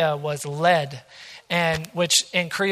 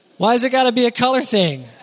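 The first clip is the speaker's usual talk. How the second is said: teasing, playful fake-offended tone, raised pitch; 6 semitones higher, 5 dB louder than usual. Showing family photos, the speaker jokingly questions the listener with teasing mock offense. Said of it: "I'm just teasing you".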